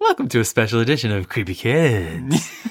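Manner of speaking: put-on ghoulish deep radio DJ voice, "kids" drawn out. A host opens the show's creepy kids segment in a radio dj voice. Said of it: "You sound like a DJ".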